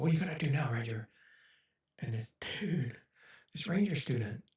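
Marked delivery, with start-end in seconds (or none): 0.0-1.1 stern, intense, hard-driving drill instructor tone. Retelling an intense friend pressuring a Ranger student: imitating Tony, stern and intense.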